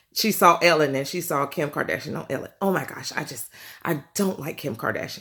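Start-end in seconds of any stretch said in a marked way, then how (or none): 2.6-5.2 hushed, breathy, whispered lady's voice. Retelling an overheard conversation, imitating the lady's voice. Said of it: "That's her voice".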